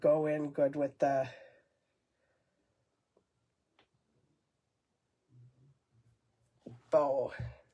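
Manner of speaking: heavy, congested breathing. Painting and describing color choices, with heavy congested breathing. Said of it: "excuse my heavy breathing".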